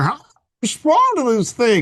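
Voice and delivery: put-on very high, swooping, baffled, confused old man fumbling. Imagining oneself fumbling at the phone like a grandpa: mock confused fumbling. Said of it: "imagine me fumbling at the phone going".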